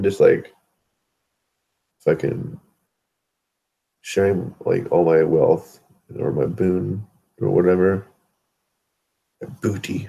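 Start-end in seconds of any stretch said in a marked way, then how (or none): 9.4-10.1 mock pirate voice, quieter. Joking about sharing wealth with the community: put-on pirate voice. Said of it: "trying to sound like a pirate".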